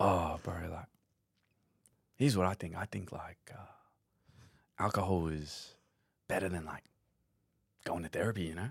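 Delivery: easygoing, casual bro-style voice. Retelling something Al once said to the speaker, doing an Al impersonation. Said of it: "I'll do my best Al impersonation".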